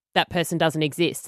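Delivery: plain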